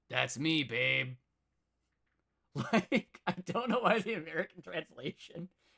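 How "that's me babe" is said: smarmy, sleazy, royal cat voice. Describing a translated show, voicing the king of cats' reply: imitating a sleazy king. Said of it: "He's just kind of like a sleazy king".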